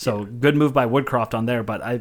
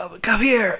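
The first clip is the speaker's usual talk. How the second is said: squeaky, very high-pitched holler; 10 semitones higher than usual. Retelling calling the dog to come in: retelling a high-pitched yell. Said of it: "trying to yell in a high pitched voice".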